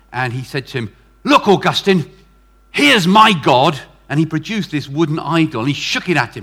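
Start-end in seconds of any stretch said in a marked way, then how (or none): 1.2-3.8 hostile, angry, loud, deliberate, drawn-out tone. Retelling a story where a man confronts Augustine: imitating an angry man. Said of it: "was quite angry with him".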